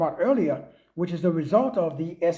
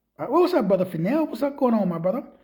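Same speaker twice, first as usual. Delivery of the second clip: usual speaking voice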